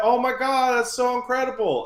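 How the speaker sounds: gushing, delighted, effusive tone.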